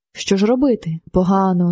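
plain reading voice

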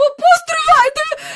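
very high, frantic, convulsive calling out. Reading Miss Andrew calling to the departing taxi driver, frantic call-out. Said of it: "судорожно гукнула вона".

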